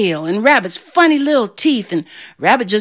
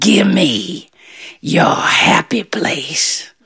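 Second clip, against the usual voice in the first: very drawn-out, slow, breathy, whispered bear growl; 6 semitones lower than usual. Narrating a story as Bear shows his claws to Rabbit: growling bear voice. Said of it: "and he growled".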